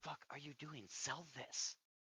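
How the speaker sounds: urgent hushed whisper under the breath. A game master voices a man leaning over to the player's character: whispering. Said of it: "leans over to you and whispers".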